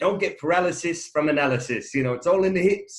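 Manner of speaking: put-on South African accent, laid on thick. Quoting a man from videos, the speaker is imitating a thick south african accent. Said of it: "in his thick South African accent".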